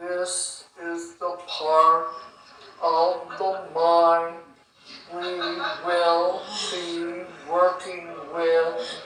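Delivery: very slow, soft, over-soothing, hypnotic drawn-out drawl. A teacher answering a question about pacing, imitating too-slow speech. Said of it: "you don't want to get too slow".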